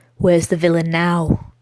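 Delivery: dark, hissed words. Narrator reads Silas's question to Orwell after his loss, as a dark hiss. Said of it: "he hissed darkly".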